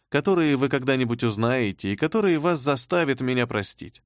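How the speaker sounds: ordinary delivery, nothing marked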